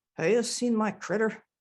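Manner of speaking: put-on strong, laid-on Swedish accent. Retelling what a man looking for his lost cat would come and say: strong Swedish accent. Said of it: "he spoke in a strong Swedish accent".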